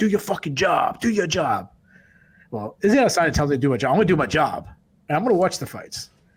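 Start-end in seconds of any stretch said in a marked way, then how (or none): 0.0-1.7 fed-up, irritated, angry demanding tone. Retelling how Israel Adesanya answered the media: imitating an angry Israel Adesanya. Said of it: "He got all pissed off and he said".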